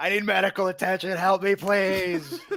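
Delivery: very high, very loud, shrill, piercing full-volume scream. Casting an illusion in a game, a player voices it screaming for help. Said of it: "As loud as it can be".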